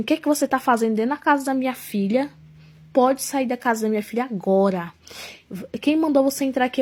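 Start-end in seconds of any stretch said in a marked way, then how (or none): none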